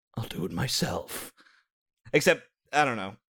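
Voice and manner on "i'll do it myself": breathed-out, slow villain delivery. Repeating a movie line from a joke: Thanos voice. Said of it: "did that sound like Thanos?".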